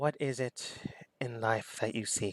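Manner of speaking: near-whisper, almost whispering ghostly spirit voice. Voicing a weapon spirit speaking into a player's mind: almost whispering phantasm voice. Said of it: "a almost whispering phantasm".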